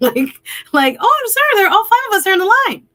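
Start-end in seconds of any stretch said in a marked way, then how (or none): 1.0-2.8 sugary, very high, loud, polite sweet voice. Retelling speaking to a man trying to skip the line, in a nice high-pitched voice. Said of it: "in a very nice, high pitched voice".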